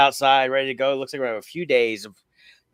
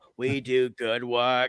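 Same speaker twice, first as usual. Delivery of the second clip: slow, light put-on Boston accent; 4 dB quieter than usual. Showing the other speaker how they sound like an old commercial, in a little Kennedy accent. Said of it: "doing a little uh Kennedy accent".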